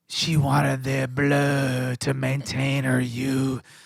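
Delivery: low, smoky, sultry tour-guide voice. Asked to imitate the tour guide, retelling his tour story in Jack's sultry smoky voice. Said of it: "sultry, s- smoky voice".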